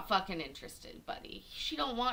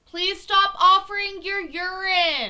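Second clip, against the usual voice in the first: very loud, slow, high yell, "urine" drawn out; 8 semitones higher, 13 dB louder than usual. Reacting to a man who keeps offering his urine to the judge: yelling. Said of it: "I love that I'm yelling that in this house".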